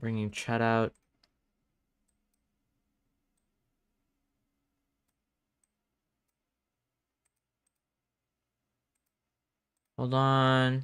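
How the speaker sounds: hushed, hurried, panicky speech. A streamer with broken stream sound brings chat up, panicked. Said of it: "I'm actually panicking right now".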